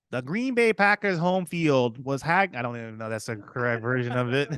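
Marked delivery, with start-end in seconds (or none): 0.1-2.5 put-on Wisconsin local's accent, pitched up. Sharing a Green Bay Packers fact, asked to say it in their accent: Wisconsin accent. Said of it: "say it in their accent".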